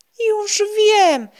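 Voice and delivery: very high, loud, sudden outburst. A boy watching clouds with his friends gives a sudden exclamation. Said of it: "wykrzyknął nagle".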